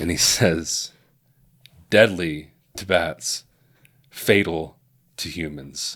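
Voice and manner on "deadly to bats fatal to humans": grand, theatrical, slow, dramatic heroic delivery. Retelling a movie line he says so dramatically: dramatic Morbius impression. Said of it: "he says it so dramatically".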